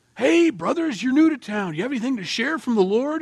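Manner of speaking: welcoming, hearty voice, called out high and loud.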